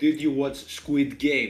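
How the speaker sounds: slow, deliberately bad, horrible Greek accent. Showing how they would ask a greek person a question, in a horrible greek accent. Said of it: "I'm going to keep my horrible Greek accent".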